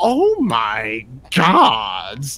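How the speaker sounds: slow, drawn-out, patronizing, condescending tone.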